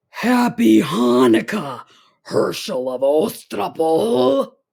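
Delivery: loud, horrible goblin voice like cracking bones. Reading a story, the goblin king greets the man who sat up: voice like cracking bones. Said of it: "a voice that sounded like the cracking of bones".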